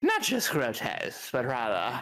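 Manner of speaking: attempted true British accent. Trying out accents for another person, attempting a true British accent. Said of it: "I'll try the true Britain".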